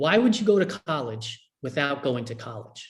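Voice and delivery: ordinary talk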